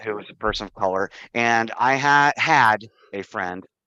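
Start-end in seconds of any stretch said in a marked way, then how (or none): 1.3-3.6 strong, hard stress on had. Telling a story about a friend, with strong stress on had. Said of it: "I've stressed the word had".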